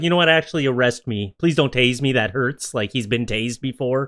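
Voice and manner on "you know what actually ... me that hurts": ordinary delivery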